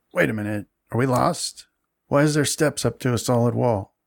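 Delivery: throaty, guttural goblin voice. Narrating to the players, voice a goblin heard on the steps in a guttural goblin voice. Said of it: "a guttural goblin voice saying".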